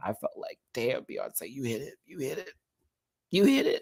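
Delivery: moved, emotion welling up, soft and swooping. Recalling sobbing at the end of the movie, getting emotional. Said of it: "I'm getting emotional".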